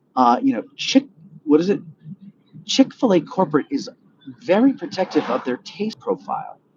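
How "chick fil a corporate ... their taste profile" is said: nasally voice placed up in head, pitched up. Showing how another speaker hears Mike: nasal impression of Mike. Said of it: "That wasn't a good impression".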